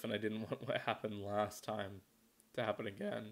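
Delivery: voice breaking. Narrating what happened on the way down, voice cracking. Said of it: "Voice crack".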